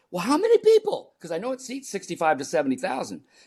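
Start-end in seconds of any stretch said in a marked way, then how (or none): 0.1-1.1 mock, shrill, very high, raised panicked voice. Retelling own question after hearing the venue size: acting out past panic. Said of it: "I'm in panic".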